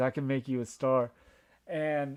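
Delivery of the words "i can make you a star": normal talking voice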